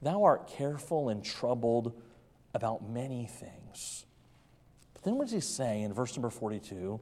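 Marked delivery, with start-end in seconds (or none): 0.0-4.0 play-acted tender, compassionate, kindly tone. Speaker voices Christ speaking to Martha in the verse; acting out a compassionate tone. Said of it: "just very compassionately".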